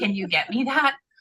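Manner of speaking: sarcastic, joking, tongue-in-cheek delivery. Acting out a joke reply to people offering help: mock sarcastic joking. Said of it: "I wanna sarcastically".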